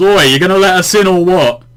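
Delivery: direct, no-nonsense shout. Telling how a companion just walked up, retelling a yell. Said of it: "just walks up and just yells".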